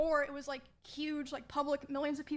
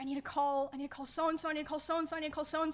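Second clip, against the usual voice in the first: usual speaking voice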